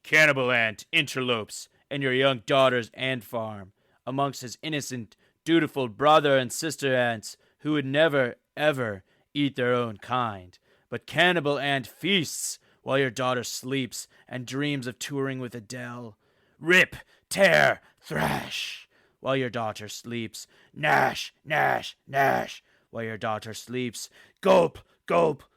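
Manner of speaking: loud, theatrical, dramatic storytelling voice. A streamer whose own voice is fading narrates a bit about Cannibal Ant in a dramatic voice. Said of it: "I'm going to do some type of dramatic voice".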